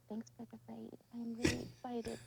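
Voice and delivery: hushed, soft, kept-down, careful voice. Streamer thanking viewers for a raid while husband sleeps, hushed voice. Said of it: "but I have to talk like this".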